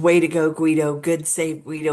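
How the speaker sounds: plain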